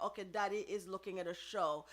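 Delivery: normal talking voice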